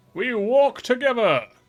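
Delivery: dramatic heroic delivery. Recalling a role voiced in an accent, redoing its line: dramatic, heroic delivery. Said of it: "I had to sound very dramatic and heroic".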